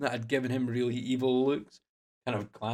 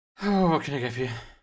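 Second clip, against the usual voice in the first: put-on heavy breathing; 2 semitones higher, 5 dB louder than usual. Retelling reaching the front of a bar, imitating the bartender breathing heavily. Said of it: "The bartender's like breathing quite heavily".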